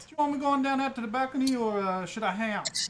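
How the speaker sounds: put-on Cajun accent. Voicing Everett answering his wife's question: Everett's Cajun accent. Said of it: "Is this Everett's accent that you're doing?".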